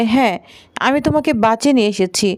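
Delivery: ordinary delivery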